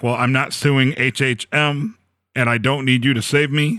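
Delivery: normal talking voice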